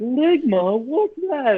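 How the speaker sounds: very high, squeaky voice. Retelling the dubbed clip again, Slippy asks a question: imitating Slippy. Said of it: "she's like".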